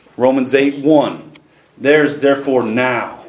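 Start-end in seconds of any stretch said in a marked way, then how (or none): 1.8-3.1 now stressed hard and said slowly. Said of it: "I'm gonna emphasize that word now".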